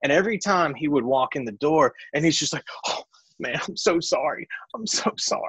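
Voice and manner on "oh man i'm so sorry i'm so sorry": forced, tearless fake crying. Retelling a late co-host walking in, imitating someone fake crying. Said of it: "he's trying his best to cry".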